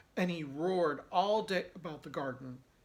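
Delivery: plain reading voice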